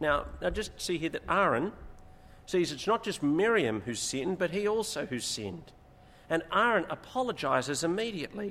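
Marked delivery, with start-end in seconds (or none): none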